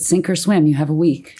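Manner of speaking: ordinary talk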